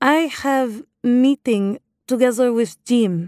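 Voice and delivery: fake, affected, put-on Russian accent. Retelling talking to the bouncer at the entrance, in an affected Russian accent. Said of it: "I said in my affected Russian accent".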